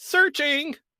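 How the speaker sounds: very high, loud, sustained anime-style yell. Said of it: "he just keeps constantly yelling".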